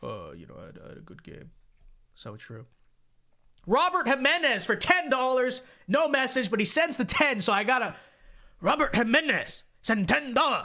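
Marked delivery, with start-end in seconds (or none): 0.0-1.5 very quiet, very low, hushed voice. Imitating a quarterback talking at press conferences: imitating Anthony Richardson. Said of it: "I literally sound like him right now".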